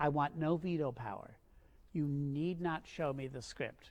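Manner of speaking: plain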